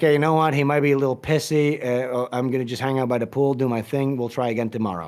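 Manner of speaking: plain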